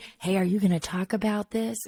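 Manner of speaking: put-on whisper. Speaker retells a woman whispering a question to them, retelling a whisper. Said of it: "She whispers to me".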